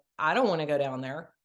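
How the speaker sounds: ordinary talk, nothing marked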